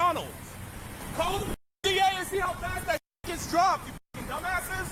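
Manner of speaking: shouting. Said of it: "He's yelling".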